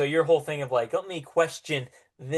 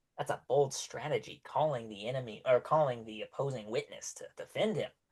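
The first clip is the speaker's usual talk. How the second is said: hushed, whispered aside; 8 dB quieter than usual. Voicing a judge speaking to the record keeper: whispering in character. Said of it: "he kinda whispers".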